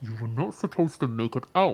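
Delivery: loud voice muffled through cloth. A hidden speaker, voice probably through a scarf: slightly muffled voice. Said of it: "using a slightly muffled voice".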